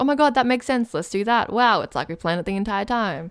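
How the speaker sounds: plain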